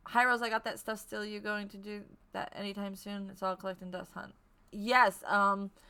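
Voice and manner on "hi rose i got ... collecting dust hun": usual speaking voice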